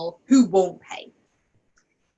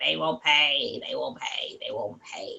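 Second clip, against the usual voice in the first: low, fading, little doubting inner voice. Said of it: "this little voice going".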